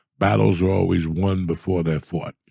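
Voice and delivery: ordinary talk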